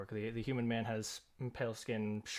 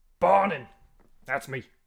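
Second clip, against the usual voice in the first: very loud bellowing in a clumsy, horrible put-on voice; 4 semitones higher, 15 dB louder than usual. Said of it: "Gotta find a better way to do that voice".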